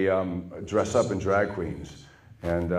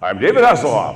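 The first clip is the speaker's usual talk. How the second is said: booming superhero voice, loud and big; 4 semitones higher, 11 dB louder than usual. Retelling a director's line reading, saying it like Superman. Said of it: "Just say it like Superman".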